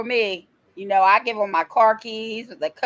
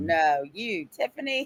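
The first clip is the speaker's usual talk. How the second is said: mock-sarcastic tone, lower pitch and quieter; 5 semitones lower, 7 dB quieter than usual. Retelling how he answered her saying she wasn't afraid, imitating his sarcastic reply. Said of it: "being sarcastic".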